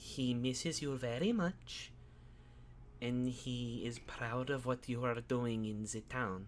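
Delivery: soft, token eerie put-on voice. Retelling what she said to the listener, imitating her creepy tone. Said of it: "like creepy tone of voice".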